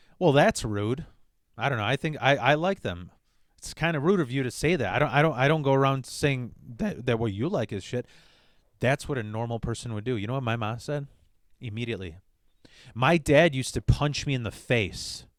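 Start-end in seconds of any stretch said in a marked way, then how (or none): none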